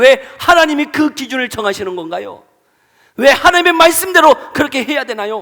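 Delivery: loud, high-pitched, angry voice.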